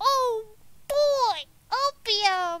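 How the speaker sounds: cartoony put-on character voice, high and loud. A player repeats a line just heard in the game, in a cartoon character voice. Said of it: "Sound like a cartoon character".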